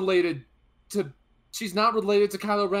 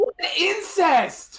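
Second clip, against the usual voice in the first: shouting, higher pitch; 9 semitones higher than usual. Reacting in disbelief to another speaker's claim: yelling. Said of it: "Don't fucking yell at me!".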